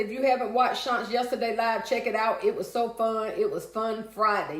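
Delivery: ordinary talk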